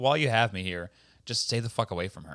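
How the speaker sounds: put-on villainous, menacing delivery. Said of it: "fully heels".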